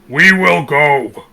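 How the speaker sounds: very loud, strained, booming delivery. A character speaking for the first time, loud and strained. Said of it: "just really loudly says".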